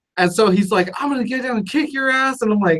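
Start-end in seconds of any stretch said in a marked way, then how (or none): 1.0-2.4 play-acted, high, furious, angry voice. Retelling a driver's threat after he got more angry: imitating an angry driver. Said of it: "he gets even more angry".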